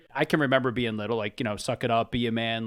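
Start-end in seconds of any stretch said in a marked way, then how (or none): none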